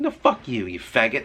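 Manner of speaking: normal talking voice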